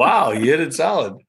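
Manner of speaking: high, surprised, play-acted astonished exclamation. Quoting what he said after their hit, mock-surprised. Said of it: "he sounded surprised there".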